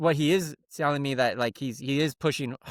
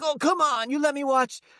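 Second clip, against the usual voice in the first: put-on whining, pleading, childlike voice. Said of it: "And he was like".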